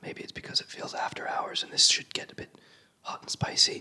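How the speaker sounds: soft, breathy whisper. Wrapping up a talk to listeners, suddenly whispering without knowing why. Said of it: "I don't know why I'm whispering now".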